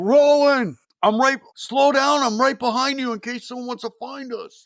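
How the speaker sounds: loud, screaming, yelled-out call. Retelling a scene where a character runs from a mob: imitating a character screaming. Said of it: "And he's screaming".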